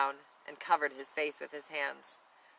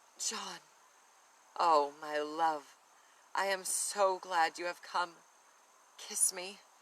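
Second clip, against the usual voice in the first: soft, sensual, voluptuous whisper; 3 semitones higher than usual. A sleepwalking woman whispers to her betrothed in a soft, voluptuous whisper. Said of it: "whispered in a soft, voluptuous voice".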